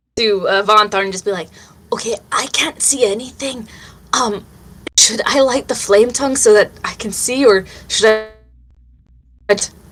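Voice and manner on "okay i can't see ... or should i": whispered in an acted character voice. Whispering to a party member in character about lighting the flame tongue: whispering in character. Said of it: "I'm gonna whisper to".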